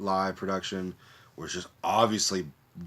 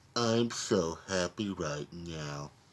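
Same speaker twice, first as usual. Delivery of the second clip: put-on droopy, slow cartoon dog voice; 3 dB quieter than usual. Naming a voice actor's roles, doing his cartoon dog character: Droopy Dog voice. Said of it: "he was also Droopy Dog".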